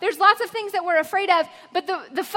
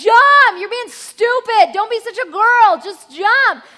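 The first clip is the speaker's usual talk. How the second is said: fed-up, loud, angry yelling; 4 semitones higher, 7 dB louder than usual. A teacher on a trip recalls a scared girl who wouldn't jump, retelling a yell. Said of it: "I was like yelling at her".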